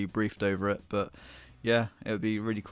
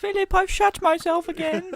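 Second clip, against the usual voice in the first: shrill, very high, loud, royally posh voice; 9 dB louder than usual. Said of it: "the Queen talks like this".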